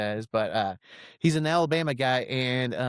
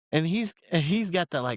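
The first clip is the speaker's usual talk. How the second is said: ordinary talk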